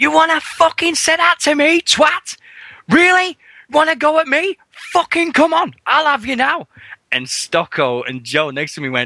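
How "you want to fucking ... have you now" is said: very high, furious, raging yelling. Retelling jumping up at a wrestler in the ring: retelling an angry outburst. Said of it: "I jumped up and I went".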